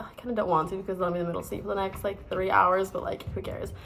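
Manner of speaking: ordinary talk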